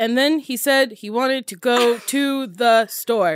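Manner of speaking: slow, stiff, stilted reading in metered iambic pentameter. Imitating a sister reading lines badly: imitating sister's stilted line reading. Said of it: "She's doing it all in iambic pentameter".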